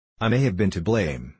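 plain reading voice

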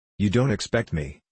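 plain reading voice

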